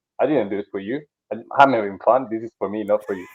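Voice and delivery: ordinary talk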